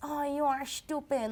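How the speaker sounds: thick, laid-on South American accent, high and slow. Imitating how they used to sound speaking English: heavy South American accent. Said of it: "but I sound like this".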